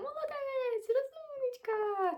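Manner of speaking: very high, drawn-out, thin little voice.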